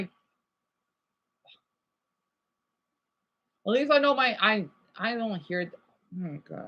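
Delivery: struggling to get words out. Speaking to an audience, overwhelmed, tongue-tied. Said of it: "I can't even talk".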